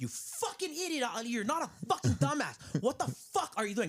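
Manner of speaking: high, swooping, drawn-out yell. A parent demonstrates how they yell at their daughter, yelling. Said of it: "That's how I yell at her".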